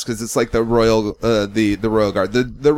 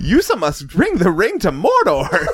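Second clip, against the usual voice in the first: high, swooping, drawn-out character voice; 8 semitones higher than usual. Doing Lord of the Rings lines as Jar Jar impressions: Jar Jar Binks voice. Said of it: "doing Jar Jar impressions".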